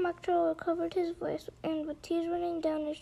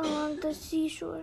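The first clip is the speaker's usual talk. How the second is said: usual speaking voice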